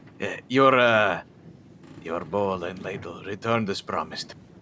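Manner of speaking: put-on, halting Russian accent. Speaker's character hands back the borrowed bowl and ladle: russian accent. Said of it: "I just switched into a Russian accent".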